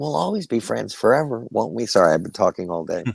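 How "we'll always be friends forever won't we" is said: put-on small raspy child voice. Recalling a childhood voice role, doing the little Todd voice. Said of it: "that little Todd".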